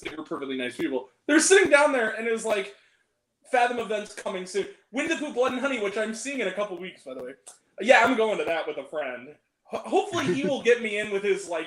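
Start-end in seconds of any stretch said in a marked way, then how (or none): none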